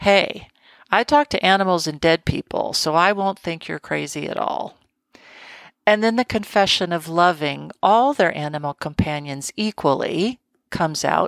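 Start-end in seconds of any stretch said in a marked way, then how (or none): none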